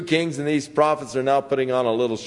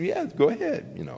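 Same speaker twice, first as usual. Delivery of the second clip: mock hollow, offhand, insincere sarcastic tone; 4 semitones higher, 6 dB quieter than usual. Retelling how he answered the king insincerely: imitating an insincere reply. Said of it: "he answered him in a very insincere".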